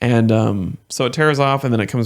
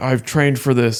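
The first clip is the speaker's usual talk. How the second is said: mock super excited voice; 3 semitones higher than usual. Retelling what a neighbor fresh from EMT school said: imitating someone super excited. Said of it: "super excited kind of stuff".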